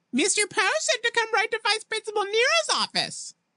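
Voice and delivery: very high, swooping, shrieky taunting voice. A man mimics Klaus's words back at him, in a high, shrieky voice. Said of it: "mimicked in a high, shrieky voice".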